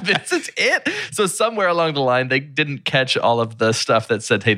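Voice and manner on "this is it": mock, very high, incredulous shout. Recalling someone in the theater at the film's end, retelling a yell of disbelief. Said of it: "Like just yelling like".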